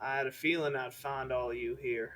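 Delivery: cowboy character voice. Narrating a voice that everyone in the room hears, in a cowboy character voice. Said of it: "The cowboy's back".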